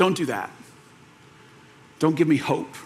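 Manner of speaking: put-on soft, cracking, breaking voice. Retelling a scene where he answers her hope, imitating a cracking voice. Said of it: "with like this cracking voice".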